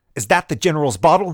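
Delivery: insistent, alarmed voice, high and loud. The adjutant demands an answer from the woman. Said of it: "he demanded".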